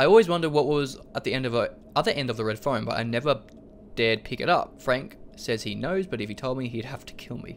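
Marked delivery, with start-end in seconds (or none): none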